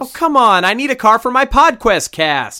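loud, high-pitched screaming. Handed keys to a car without wheels, the customer protests, screaming. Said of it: "Don't scream no more".

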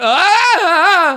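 long, piercing, very high, loud, drawn-out shriek. Retelling being hit by a falling elevator ceiling: imitating own scream. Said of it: "literally went".

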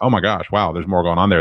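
usual speaking voice

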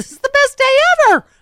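shrill, booming, high and loud cartoon voice. Imitating a speaker whose voice got high: SpongeBob voice. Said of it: "And he SpongeBob".

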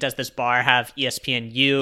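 ordinary delivery

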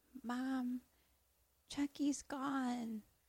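very quiet, high, drawn-out, terrified hush. Retelling a movie scene where the boy is terrified: imitating a terrified quiet voice. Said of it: "so fucking terrified that he just gets really quiet".

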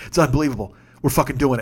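normal talking voice

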